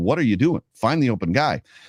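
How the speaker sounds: usual speaking voice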